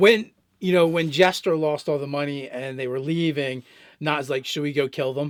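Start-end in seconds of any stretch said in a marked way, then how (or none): 4.5-5.3 flat, soft, dead serious deadpan tone. Recounting what a character said as the party was leaving, retelling a deadpan line. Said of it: "deadpan serious".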